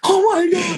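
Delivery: put-on very high, excited, girlish squeal. Describing meeting people who influenced him, acting out his inner scream like a little schoolgirl. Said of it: "I'm screaming like a little schoolgirl".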